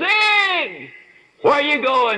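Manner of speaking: put-on big carrying shout, very high, one word drawn out. Retelling a friend calling out across a hotel lobby: imitating a booming voice. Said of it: "this booming voice of his".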